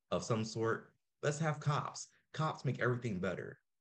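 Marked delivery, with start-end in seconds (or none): 1.2-3.5 heavily sarcastic, mock-earnest, pitched-up voice. Mocking what people say about a utopia: imitating people sarcastically. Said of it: "I'm being sarcastic".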